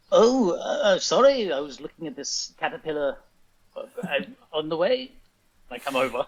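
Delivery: put-on loud old grandpa voice. Voicing a character arriving late after looking at a caterpillar: sounds like a grandpa. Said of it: "You sound like my grandpa".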